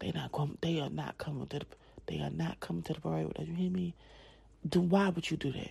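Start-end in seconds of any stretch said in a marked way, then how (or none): 0.0-3.9 whisper, much quieter and slower. A parent recounts pulling their daughter aside, retelling a whisper. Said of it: "I'm whispering".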